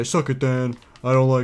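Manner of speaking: put-on tough-guy swagger, loud and slow. Act out what a man who compliments others off camera would say on camera, a put-on tough-guy act. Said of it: "Tyler may sound like a may act like a tough guy on camera".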